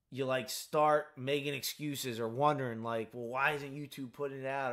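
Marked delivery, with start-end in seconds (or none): none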